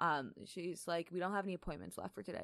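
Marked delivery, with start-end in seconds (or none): 1.1-2.4 acted, curt, dismissive brush-off phone tone. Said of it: "And that exact voice".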